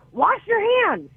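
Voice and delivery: shrill, piercing yell, very high. Describing the constant update guy who always yells the numbers out: retelling a yell. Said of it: "Sometimes I just hear him yell".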